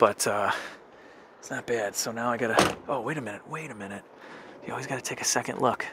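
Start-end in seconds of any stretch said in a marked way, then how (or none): 2.9-5.9 much softer, whispered voice. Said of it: "Sorry, I'm whispering".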